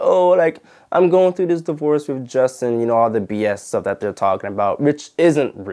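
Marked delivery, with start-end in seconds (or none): 0.0-2.8 higher-pitched put-on crying, tearful pleading sound. Speaker recounting a scene at the courthouse after a trial, imitating Mahogany crying. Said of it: "Mahogany was like crying and like".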